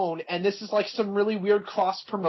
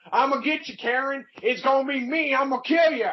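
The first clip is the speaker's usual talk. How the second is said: put-on high-pitched country bumpkin accent; 7 semitones higher than usual. Retelling a wrestling segment, imitating Jeff Jarrett's country bumpkin accent. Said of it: "in his country bumpkin ass accent".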